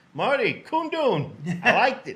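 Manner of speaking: high, loud, slow, starstruck awed voice.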